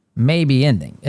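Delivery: "may" hit hard and singled out with heavy stress. Talking about the war possibly ending, stress on 'may'. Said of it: "I'm I'm stressing the word may here".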